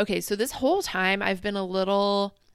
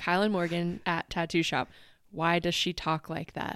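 normal talking voice

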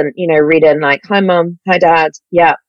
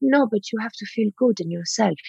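very soft, hushed put-on Swedish accent; 4 semitones higher, 11 dB quieter than usual. Retelling what a man said to the speaker, in a Swedish accent. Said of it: "this is a Swedish accent, by the way".

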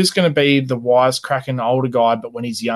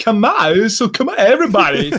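put-on halting voice, slightly higher pitch; 10 semitones higher, 4 dB louder than usual. Showing the others how Christopher Walken sounds: Christopher Walken impression. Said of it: "Christopher Walken's more like this".

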